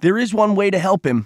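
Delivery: high, blurted out all at once. Reading a story, a character calls out as the boat's engine starts: blurted. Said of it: "Cole blurted".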